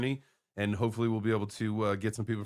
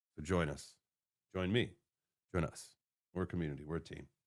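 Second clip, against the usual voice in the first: soft, ominous, creepy and sinister voice; 5 semitones lower, 8 dB quieter than usual. Ending a talk about the road to 100 million, sounding sinister. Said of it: "That sounded so sinister".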